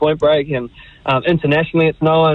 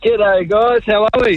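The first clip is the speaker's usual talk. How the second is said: happy, cheerful, joyful, high-pitched voice; 6 semitones higher than usual. Olympic surfer greeting the hosts as he joins the broadcast, joyful. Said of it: "I can hear the joy in your voice".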